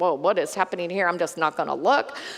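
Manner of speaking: fearful, overwhelmed, awed, frightened exclamation. Retelling the scripture scene at the burning bush: imitating a frightened Moses. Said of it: "He was afraid to look at God".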